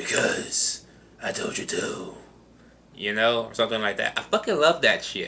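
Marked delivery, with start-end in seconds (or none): 0.0-2.1 slow, scratchy, breathy, raspy whisper. Imitating a villain answering himself: scratchy Two-Face voice. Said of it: "answers himself with a scratchy voice".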